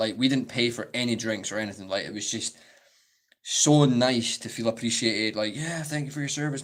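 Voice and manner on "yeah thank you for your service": fake, put-on American accent. Retelling being thanked for their service: put-on American accent. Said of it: "I'm so sorry if I've just offended a bunch of Americans".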